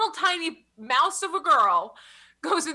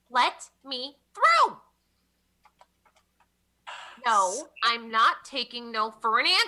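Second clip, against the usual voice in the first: seriously obnoxious, pushy, rowdy voice; 2 semitones lower than usual. Someone in the hallway demands to get into the lab, seriously obnoxious voice. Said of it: "one seriously obnoxious voice in the hallway causing a real big ruckus".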